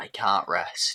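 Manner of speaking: dead-serious, grave, low, solemn delivery. Voicing Norbit looking someone dead in the eye: very serious. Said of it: "look him dead in the eye very seriously and go".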